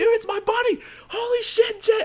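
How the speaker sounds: mock very high, loud, startled, freaked-out shout. Retelling spotting a friend's light behind them in the game: retelling own freaked-out shout. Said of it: "we're freaking out".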